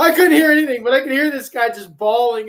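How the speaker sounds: excited, agitated, high-pitched, loud, laughing delivery.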